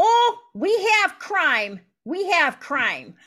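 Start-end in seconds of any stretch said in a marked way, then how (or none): 0.0-2.3 high, raised voice in a local manner of speaking. The speaker mimics how people answer about the low crime rate. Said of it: "they say like this".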